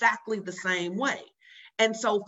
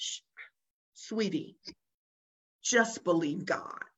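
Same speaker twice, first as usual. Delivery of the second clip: acted, always-calm, soothing, settled, hushed voice; 3 semitones lower, 4 dB quieter than usual. Retelling what the pastor says on the phone: imitating Pastor Cynthia's calm tone. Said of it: "she's always so calm about it too".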